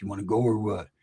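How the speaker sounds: mock quiet dangerous voice. Retelling how a relative asked someone if they wanted to go, imitating her delivery. imitating a quiet deadly voice. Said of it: "Very quiet, very mellow".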